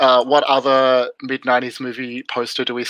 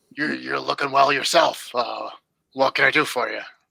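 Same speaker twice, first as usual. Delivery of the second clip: put-on deep, throaty character voice; 4 dB quieter than usual. Voicing a character in a store scene, in a deep throaty Harvey Fierstein voice. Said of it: "a deep, sort of throaty voice".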